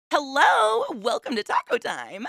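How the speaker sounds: very high, swooping voice. Recalling how they greeted customers over the speaker, very high-pitched greeting voice. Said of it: "It was really up there".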